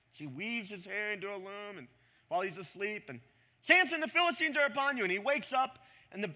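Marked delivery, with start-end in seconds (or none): 3.6-5.0 shrill, very high, loud yell. Retelling a bible story, as she wakes him: imitating someone yelling. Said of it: "she yells at him".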